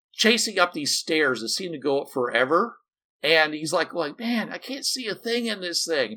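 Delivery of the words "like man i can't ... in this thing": put-on wheezing, out of breath, much higher. Retelling a minor character chasing someone up endless stairs, mock wheezing. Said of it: "or he's like wheezing".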